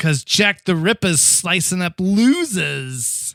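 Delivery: put-on slow New York accent, losers drawn out. Speaker quotes what a man said when he pulled it up: New York accent. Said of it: "I think it was more uh, New York".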